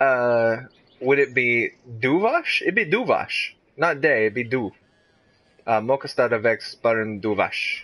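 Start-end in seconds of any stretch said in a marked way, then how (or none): 5.8-7.8 Spanish-sounding accent. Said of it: "That's like a Spanish accent".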